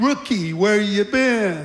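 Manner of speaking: dry, sarcastic, needling tone. Retelling the senior guard's question to the returning rookie: imitating a sarcastic question. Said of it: "he said sarcastically".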